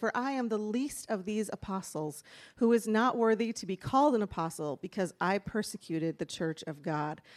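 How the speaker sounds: plain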